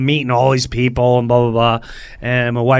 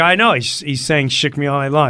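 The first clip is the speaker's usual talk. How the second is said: ordinary delivery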